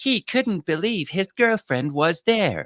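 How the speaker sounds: very high, automated, robotic narrator voiceover. Ranting on the show about social media posts, the speaker imitates a robotic voiceover. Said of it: "they have a voice that goes".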